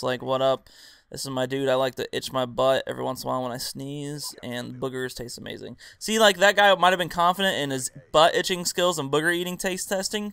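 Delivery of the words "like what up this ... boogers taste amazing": dull, level, flat drone with no emphasis. Showing how an unconfident video commentator sounds, boring monotone voice. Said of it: "it's just monotone".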